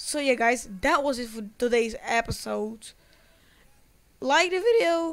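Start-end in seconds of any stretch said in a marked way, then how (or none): 4.2-5.1 loud voice crack, jumping high mid-phrase. Youtuber signing off an episode, asking viewers to like the video: voice cracking. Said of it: "that was a voice crack".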